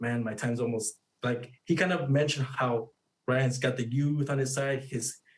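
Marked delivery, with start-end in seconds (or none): 0.0-0.9 put-on muttering under the breath, quieter. Retelling what Canelo said in an interview: imitating Canelo muttering under his breath. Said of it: "he kinda muttered under his breath".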